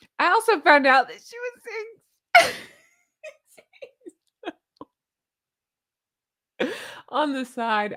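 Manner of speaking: high voice, giggling through the words. Reading a joke from the comments aloud: laughing while talking. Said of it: "and I can't stop laughing".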